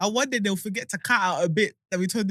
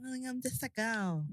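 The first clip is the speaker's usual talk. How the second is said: put-on dainty voice, high, very quiet and slow; 5 semitones higher, 12 dB quieter than usual. Mocking the other speaker's act: imitating someone's put-on soft voice. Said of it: "You put, you put it on".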